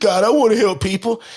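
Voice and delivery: weepy, snotty, tearful sobbing voice. Retelling own past prayer to God: imitating own past crying. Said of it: "I'm crying and snotting all up".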